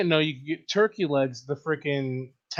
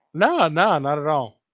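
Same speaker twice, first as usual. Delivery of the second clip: smile audible in the raised voice; 5 dB louder than usual. Brushing off a skeptical question, smiling while talking. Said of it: "I can hear the smile in your voice".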